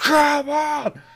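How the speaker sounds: triumphant, overjoyed, euphoric yell, very high and very loud. Recounting finally killing him after many attempts, retelling a euphoric shout. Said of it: "And I started shouting".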